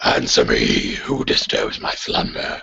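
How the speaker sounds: gruff, rough, creaky armored-knight warrior voice. Voicing a seven-foot armored warrior risen from the ground: armored warrior voice. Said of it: "And he says".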